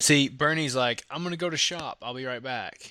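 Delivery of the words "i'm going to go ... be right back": put-on plain British accent. Retelling how Bernie talks, in a story about shop names: imitating Bernie's British accent. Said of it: "he says it in a British accent".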